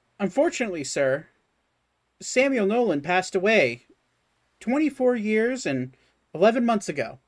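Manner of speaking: automated robotic machine voice. Replying to an inquiry about the dad, Samuel Nolan, in an automated Warforged voice. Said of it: "It's an automated, Warforged voice".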